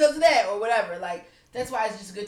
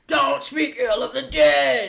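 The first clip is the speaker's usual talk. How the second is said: loud, rough put-on voice; 5 semitones higher, 7 dB louder than usual. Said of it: "in my [name] voice".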